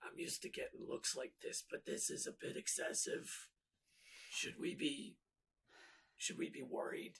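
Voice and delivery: leaning-in whispered aside. Player voicing a character who leans to the party, whispered aside. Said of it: "leans to the party and whispers".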